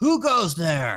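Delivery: sudden, loud yelled words. Narrator voices Vanifer, kneeling in prayer as players run in, Vanifer yelling out. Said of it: "lifts her head and just yells out".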